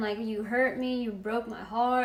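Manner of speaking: mock crying, tearful pleading tone. Speaker retells what he said during a breakup that went on all night, imitating someone crying. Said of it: "and he was crying".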